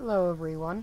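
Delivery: voice cracking and breaking. Opening with a greeting to everyone, the speaker's voice cracking. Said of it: "that was a voice crack".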